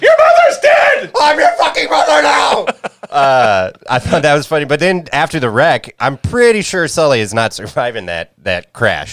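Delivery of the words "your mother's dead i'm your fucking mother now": shrill, very high, loud screaming. Recapping the ending, speaker quotes Bridget to Sully in the truck: retelling Bridget screaming. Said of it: "She's like screaming that at her".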